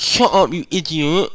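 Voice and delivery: strange voice, very high, loud, shrill, slow, drawn out. Imitating a classmate who suddenly snaps at someone, in a weird imitated voice. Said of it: "What the fuck was that voice?".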